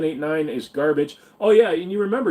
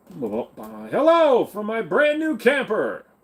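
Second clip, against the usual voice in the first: pitched-up game show host announcer voice; 6 semitones higher than usual. Character greeting someone tied up in the woods from his camper, game show host voice. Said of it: "Sounds like you're starting a game show".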